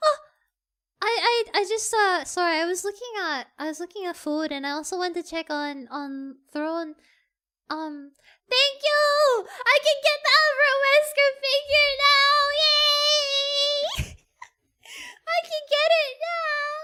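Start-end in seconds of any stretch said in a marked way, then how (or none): 8.5-16.8 overexcited, delighted, pitched-up cheering. Speaker thanking someone, later admitting they got too excited: overexcited. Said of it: "Sorry! I got too excited!".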